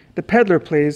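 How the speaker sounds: plain reading voice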